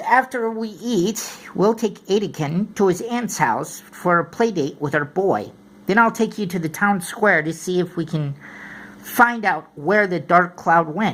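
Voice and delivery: plain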